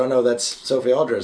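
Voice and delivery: normal talking voice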